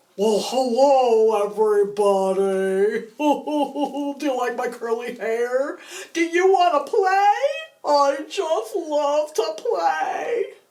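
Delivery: high-pitched, very slow sock puppet voice. Trying out a voice for a new sock puppet: sock puppet voice. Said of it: "Let's see what he might sound like".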